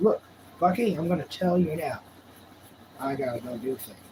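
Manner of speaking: plain, ordinary talking voice. Speaking for a dog that is giving him the business: voicing the dog's thoughts. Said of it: "He's like".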